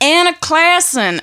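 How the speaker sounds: put-on American accent. Retelling how they had to say their own name to Americans, in an American accent. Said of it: "I always had to say it in an American accent".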